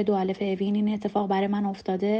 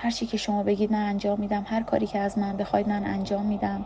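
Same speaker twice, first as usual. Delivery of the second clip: ordinary delivery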